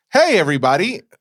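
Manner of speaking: forced pumped-up show voice. Greeting everybody after saying the voice will change: put-on energetic voice. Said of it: "I'm gonna change my voice".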